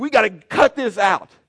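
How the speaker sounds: shrill, high-pitched, very loud shouting. Recounting a rough game on the court, the speaker is retelling a yell. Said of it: "I'm yelling".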